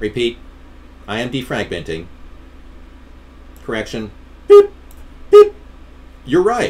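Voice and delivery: speaking in a robot-like machine voice. Joking while agreeing with another speaker: pretend robot voice. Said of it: "I'm pretending to be a robot".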